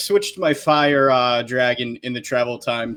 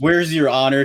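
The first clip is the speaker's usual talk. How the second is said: normal talking voice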